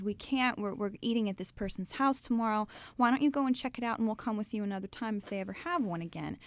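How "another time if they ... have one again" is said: ordinary talk, nothing marked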